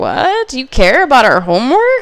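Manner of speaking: shocked, stunned disbelief with swooping pitch. Retelling own reaction when dad stayed home: imitating own shocked reaction. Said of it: "I was so shocked".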